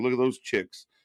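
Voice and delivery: ordinary talk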